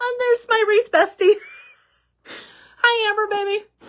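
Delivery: high, choked-up, tearful crying voice. Greeting a friend during a first livestream, crying. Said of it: "Sorry, I'm crying".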